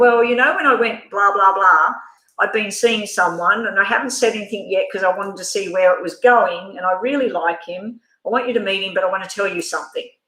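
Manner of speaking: usual speaking voice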